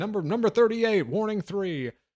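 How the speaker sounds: booming announcer voice. Describing a movie, repeating the warnings called from a truck in a booming announcer voice. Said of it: "booming announcer voice".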